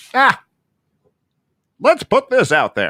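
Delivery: very high, swooping, 1920s-style New York voice. Voicing the newspaper deciding to publish a piece, old-timey voice. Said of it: "That was my old old timey voice".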